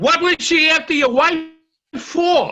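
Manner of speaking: loud, high yelling. Repeating a confusing question back to the other speaker, yelling the question. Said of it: "Why are you yelling?".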